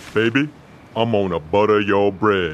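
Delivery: deep voice. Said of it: "We hear a deep voice say".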